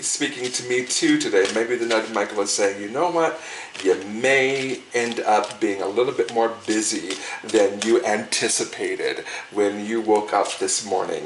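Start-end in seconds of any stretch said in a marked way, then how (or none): none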